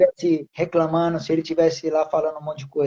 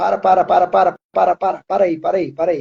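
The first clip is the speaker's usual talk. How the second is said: ordinary talk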